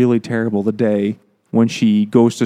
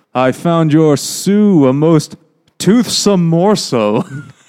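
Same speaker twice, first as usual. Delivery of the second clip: put-on slow, high, cheesy old-fashioned corny vampire voice; 6 semitones higher, 4 dB louder than usual. Quoting the letter a vampire character writes: corny fifties vampire voice. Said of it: "Like a corny nineteen like fifties be- vampire".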